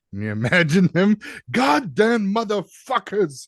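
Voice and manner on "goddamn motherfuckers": put-on angry Indian accent, much higher pitch. Imagining Satya Nadella getting the news in his office, mock-angry Satya Nadella impression. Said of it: "in his little Indian accent".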